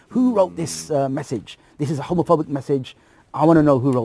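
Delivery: put-on, furious, really angry tone. Retelling the head of year demanding who wrote the message: imitating a really angry teacher. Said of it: "really angry".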